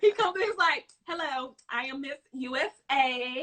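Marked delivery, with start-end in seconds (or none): 1.1-3.4 very slow, every word stretched out. Retelling how someone imitated Candace as a beauty queen: imitating Candace. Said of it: "imitates Candace flipping switch".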